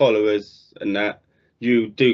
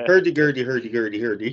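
mock Swedish gibberish, lower pitched. Running through Swedish stereotypes with friends, Swedish Chef gibberish. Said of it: "Swedish chef".

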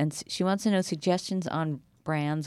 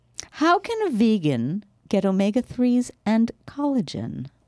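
fake British accent, higher and louder; 7 semitones higher, 6 dB louder than usual. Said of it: "So if I use an accent".

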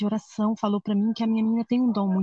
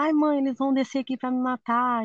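put-on scared child crying out, mild frightened cry; 3 semitones higher than usual. A mother retells her frightened daughter's reaction, imitating a scared scream. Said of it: "Ela começou a gritar".

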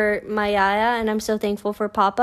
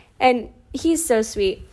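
plain

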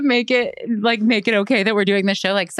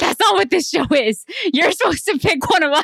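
furious, high-pitched, angry yelling; 7 semitones higher than usual. Retelling how an angry contestant yells at the others: imitating a contestant yelling. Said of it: "she starts yelling at them".

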